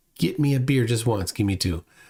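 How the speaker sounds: ordinary delivery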